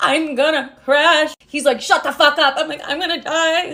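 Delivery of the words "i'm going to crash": mock sobbing, much slower. Recounting being made to drive at fifteen, retelling her crying. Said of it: "I'm bawling my eyes out behind the steering wheel".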